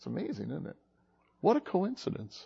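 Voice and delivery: openly sarcastic, soft, sing-song mocking tone. Speaker mocks the idea of coincidence, mocking. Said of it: "I'm mocking coincidence".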